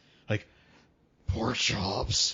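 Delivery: creepy cartoonish voice. Describing a man who rarely speaks except to name pork products: creepy cartoon-barber voice. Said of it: "the freaky barber from Courage the Cowardly Dog level of creepy voice".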